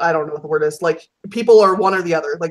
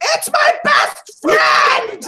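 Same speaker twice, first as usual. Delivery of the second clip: mock, very high, very drawn-out child's squealing cry. Retelling a friend's daughter seeing Darth Vader in a full theater: imitating a child screaming. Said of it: "she screams".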